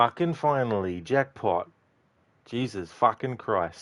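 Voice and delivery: strong, thick Australian accent, drawn out. Celebrating finally getting the dialogue: thick australian accent. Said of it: "My thick Aussie accent came out".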